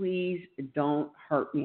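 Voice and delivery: desperate, pleading tone. Recalling the night the wall fell in, the speaker reenacts pleading with him. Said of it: "pleading with him".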